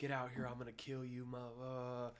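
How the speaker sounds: put-on frantic male freak-out voice. Retelling a woman's ex-husband spotting him at her door, mimicking a man freaking out. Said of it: "freaks out".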